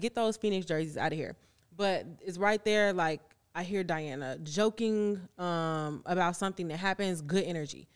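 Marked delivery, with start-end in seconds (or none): none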